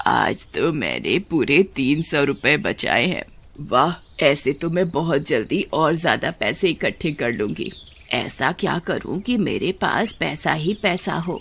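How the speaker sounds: put-on low, greedy, miserly old woman's voice. The old woman counts her money at home: greedy old woman voice. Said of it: "फिर भी [name] की माँ इतनी लालची थी कि उसका पेट ही नहीं भरता था। / बुढ़िया को अगर प्यार था तो सिर्फ पैसे और अपने पोते से। / तभी [name] की माँ उसके हाथों में से सारे पैसे ले लेती है। / लालची बुढ़िया Gr".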